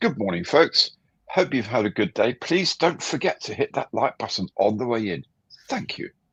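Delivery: woman's voice, polite, welcoming host tone. Asked on the show for his best impression, doing a Tiffany voice. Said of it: "Best Tiffany voice now".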